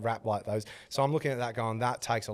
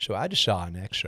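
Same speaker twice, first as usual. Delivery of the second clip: put-on laid-back Texan drawl, lower pitch; 3 semitones lower than usual. Retelling what Matthew McConaughey said on his story: Matthew McConaughey impression. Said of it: "he went on his story and he was like".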